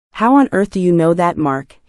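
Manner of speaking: ordinary delivery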